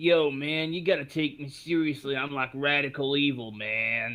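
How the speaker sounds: low, playful joshing voice. Joking after a quote from Keanu about taking him seriously: mock Keanu Reeves voice. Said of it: "I'm sorry, I just had to do it".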